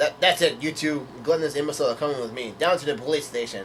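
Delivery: plain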